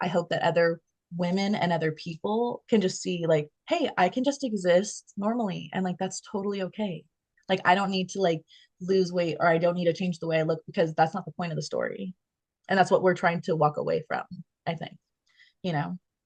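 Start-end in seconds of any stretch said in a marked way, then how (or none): none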